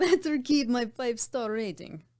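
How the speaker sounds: poor put-on Russian accent. Performing a Russian spy character who is an Uber driver: horrible Russian accent. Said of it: "Horrible accent".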